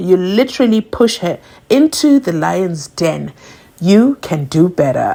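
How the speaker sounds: ordinary talk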